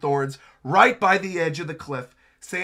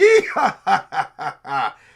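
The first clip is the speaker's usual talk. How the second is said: mock, slow, drawn-out swooping laughing through the sounds; 5 dB louder than usual. Narrating a scene, acting out Summers laughing at the falling people: imitating Summers laughing.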